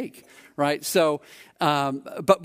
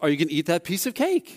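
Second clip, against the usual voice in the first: pitch climbs at the end on cake. Example of a question's end inflection: rise at the end on cake. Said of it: "you even end with an inflection. ... it goes up".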